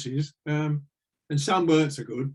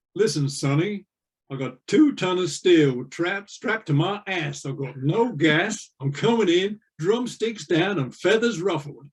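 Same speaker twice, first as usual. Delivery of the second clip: put-on American drawl with drawn-out vowels. Quoting what a man said, in an American drawl. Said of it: "he says in American drawl".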